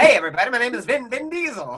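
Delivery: high, calling-out carnival-barker announcing voice. Co-hosts trying Vin Diesel impressions, one mocking the other: Vin Diesel as carnival barker. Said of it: "What is he, Carnival Barker?".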